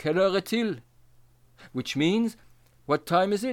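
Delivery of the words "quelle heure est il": put-on German accent in French, faster. Quoting a German man speaking French to you: put-on German accent. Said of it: "with a German accent".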